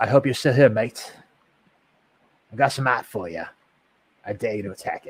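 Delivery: loud, put-on Australian accent. Speaking to a guy from down under, put-on Australian accent. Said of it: "I'll stop with my accent".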